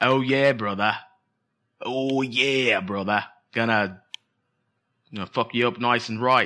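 Australian accent, tough-guy boasting tone. Unable to do an English version, the speaker tries an Australian Macho Man impression. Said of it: "That's an Australian macho man".

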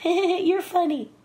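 laughing, very high-pitched, amused delivery. Retelling a first meeting with Michael and his reply: Michael impression. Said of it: "And Michael laughs and says".

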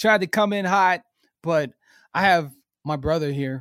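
choked-up voice. Podcast host introducing his brother on the show, choked up. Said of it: "I'm here on getting choked up".

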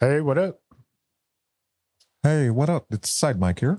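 froggy character voice. Introducing the persona Side Mike in a group bit, Side Mike voice, Kermit-like. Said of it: "You sounded more like Kermit the Frog".

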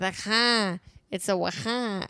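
attempted Wisconsin accent, drifting. Asked to try a Wisconsin accent, the speaker gives it a go: attempted Wisconsin accent.

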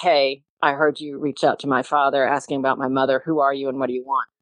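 imitated curtness. The speaker quotes a sister's email asking who they are: retelling a curt message. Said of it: "she just very curtly said".

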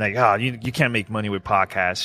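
plain

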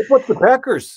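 very high, laid-on, overdone Canadian accent. Asked to redo a recent accent attempt, trying it again in a too-Canadian accent. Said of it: "that's too Canadian".

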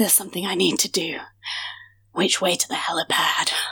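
soft, low, dreamy, smitten lovestruck voice. Speaker voices a character looking deep into Ephemeral Jones's eyes, in a lovestruck voice. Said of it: "I don't know why I'm speaking like this".

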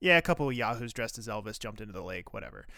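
put-on deadpan, offhand and dismissive, no fuss. Recounting how a man answered a woman's question, mock-dismissive, offhand. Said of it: "offhandedly, dismissively is like".

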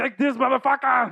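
put-on Austrian accent. Imagining his next fight, the speaker delivers a line in an Arnold impression. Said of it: "it's going to be like Arnold the whole time".

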